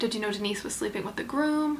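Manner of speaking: ordinary talk, nothing marked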